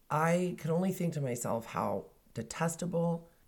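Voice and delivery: ordinary talk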